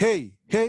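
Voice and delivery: all-out yell, loud and high. Testing a microphone and compressor, shouting into it. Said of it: "yo estoy gritando".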